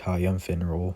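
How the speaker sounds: ordinary delivery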